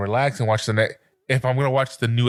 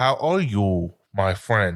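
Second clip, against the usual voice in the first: very slow English in put-on Japanese accent; 3 semitones lower than usual. Describing anime characters who speak American English: imitating Japanese accent speaking American English. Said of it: "the Japanese accent when they speak American".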